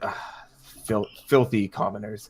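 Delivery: sneering, scornful, contemptuous delivery. Voicing a character who is handed paperwork and sneers at the name: sneering. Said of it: "he kind of sneers at the name".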